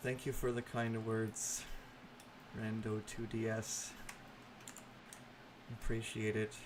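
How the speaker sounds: dead-level, exhausted, whispered monotone. Thanking someone for their kind words, in the most monotone voice. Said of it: "I say in the most monotone voice".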